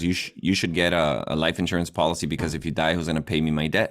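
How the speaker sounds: normal talking voice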